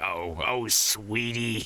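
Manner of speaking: put-on aged chain-smoker voice. Imitating an old receptionist, in an old smoker voice. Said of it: "It's got like the old smoker voice".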